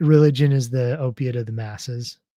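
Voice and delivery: plain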